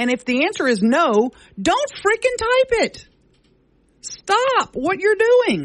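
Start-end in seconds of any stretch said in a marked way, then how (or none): 1.6-5.7 very high, rising, upset yelling rant. Speaker rants to another speaker about people typing on social media, yelling. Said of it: "Don't yell at me".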